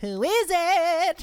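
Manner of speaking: drawn-out calling out. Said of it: "and he's like".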